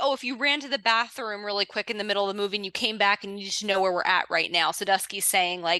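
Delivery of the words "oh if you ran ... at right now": usual speaking voice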